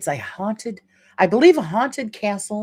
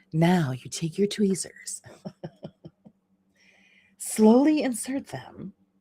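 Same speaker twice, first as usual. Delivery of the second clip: sultry, seductive put-on hotline-style phone voice; 2 semitones higher, 3 dB quieter than usual. Giving step-by-step tweezer instructions, switching to a phone voice. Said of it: "Maybe I should use my my phone voice".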